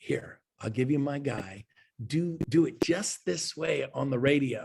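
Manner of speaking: voice dropped low, slow and deliberate, mentor-like. Retelling advice from the number one agent: imitating Jay Kinder lowering his voice. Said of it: "he lowered his voice".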